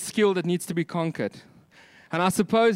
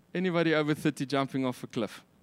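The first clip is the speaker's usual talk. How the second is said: ordinary delivery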